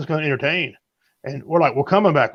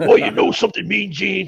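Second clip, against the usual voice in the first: gruff, rough wrestler promo voice; 3 semitones higher than usual. Showing the others a wrestler impression: Hulk Hogan impression. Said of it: "Hulk Hogan and Randy Savage".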